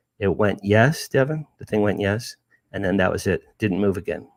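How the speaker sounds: normal talking voice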